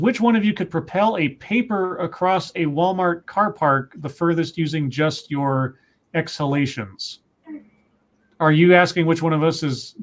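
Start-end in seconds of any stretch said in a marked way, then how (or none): none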